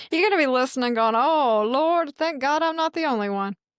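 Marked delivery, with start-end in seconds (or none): 1.2-3.5 fake, made-up Southern accent. A wife voicing an imagined listener, in a fake Southern voice. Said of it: "she just makes up a fake Southern voice".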